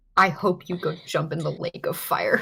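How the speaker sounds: grumbled aside, muttered under the breath. Voicing a character who curses another under her breath: muttering under breath. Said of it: "mutter under her breath in Antivan".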